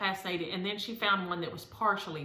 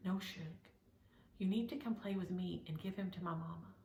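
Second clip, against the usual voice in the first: quieter put-on child voice, whispering; 9 dB quieter than usual. Retelling what Aria whispered in her ear: imitating Aria whispering. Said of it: "she would come and whisper in my ear".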